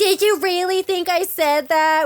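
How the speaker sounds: loud, high-pitched, whiny, obnoxious voice. Describing watching a clip with and without sound, whiny Tom Sandoval impression. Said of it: "be making his whiny".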